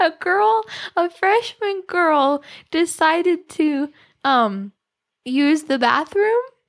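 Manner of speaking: trying hard not to crack up, stifling laugh. Explaining to the other speaker why the school courtyard is off limits: holding back a laugh. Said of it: "I'm trying to do this without laughing".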